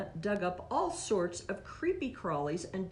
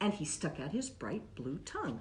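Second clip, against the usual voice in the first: ordinary delivery, nothing marked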